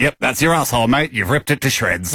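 ordinary talk, nothing marked

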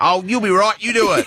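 put-on old dad voice. Imitating a father brushing off a request for help: imitating my old man. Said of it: "I'll do it like my old man".

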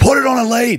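put-on furious ranting. Retelling telling off a dog owner whose dog bit: imitating an angry telling-off. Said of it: "Now I'm fuming".

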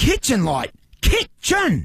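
screaming. In an ad, someone who can't get new smart lights to work, screaming. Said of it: "why are you screaming kitchen?".

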